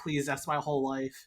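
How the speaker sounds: mock begging in a girlish voice. Retelling a movie scene, imitating a girl with a laptop: mock begging. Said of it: "begging to, like, not destroy her life's work".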